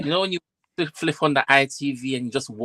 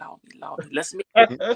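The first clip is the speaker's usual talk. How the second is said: put-on pleading whisper, pitched higher; 5 semitones higher than usual. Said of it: "I know he's whispering".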